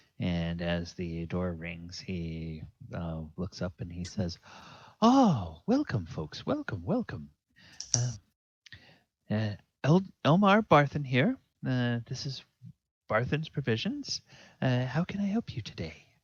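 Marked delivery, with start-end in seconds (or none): 5.0-16.0 kindly, warm tone with swooping, swinging pitch. Voicing a shopkeeper who greets customers entering his store: kindly Elmar Barthen voice. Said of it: "has a kindly manner".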